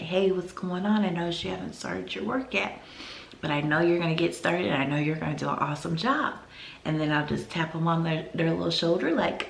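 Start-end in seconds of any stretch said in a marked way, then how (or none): 0.0-6.3 quiet, soft, calm, gentle, soothing. A teacher gets down to a student's level who hasn't started working: speaking very softly and calmly. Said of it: "talk to them very softly, very calmly".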